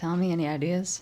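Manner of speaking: tossed-off side remark tone. Asking a companion for ideas in character: said under the breath. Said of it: "I would say kinda under my breath".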